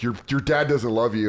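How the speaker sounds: normal talking voice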